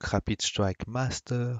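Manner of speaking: attempted, put-on English accent. Announcing the names of two new Japanese expansions, attempted English accent. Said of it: "avec mon super accent anglais".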